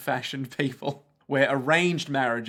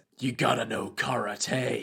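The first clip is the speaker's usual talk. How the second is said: gravelly put-on fighter voice; 2 semitones lower than usual. Quoting a karate fighter from Baki: gravelly Baki karate guy voice. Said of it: "got that, that, like, gravelly voice".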